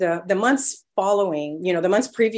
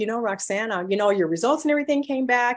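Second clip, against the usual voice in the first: mock cheery, peppy, upbeat bedside-manner doctor voice; 3 semitones higher than usual. Retelling the doctor's words about test results: imitating a peppy doctor. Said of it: "the pep in his voice".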